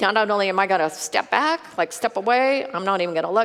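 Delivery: scared, awestruck, frightened and overwhelmed voice. Retelling the scripture scene at the burning bush: imitating a frightened Moses. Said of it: "He was afraid to look at God".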